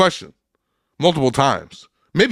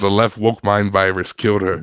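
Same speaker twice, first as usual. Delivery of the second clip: ordinary talk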